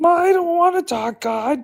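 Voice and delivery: very high-pitched put-on puppet character voice. Riffing on Muppet movie ideas with others, in a Gonzo Muppet voice. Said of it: "Is that Miss Piggy?".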